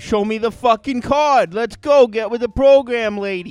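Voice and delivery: put-on New York accent. Picturing how a guy named Joey from New York talks: imitating Joey, New Yorker. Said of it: "he's from New York or something".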